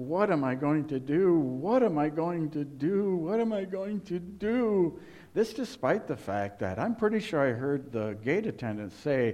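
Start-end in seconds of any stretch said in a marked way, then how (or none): 0.0-5.0 mock despairing wail, high, drawn-out, repeated. Speaker retelling a moment at an airport gate, imitating wailing. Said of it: "Just wailing throughout the airport".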